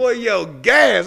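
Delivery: rough, aggressive, high street holler. Speaker recalls a man at a gas station yelling at them; retelling a man's yell. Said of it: "just yell at you like that".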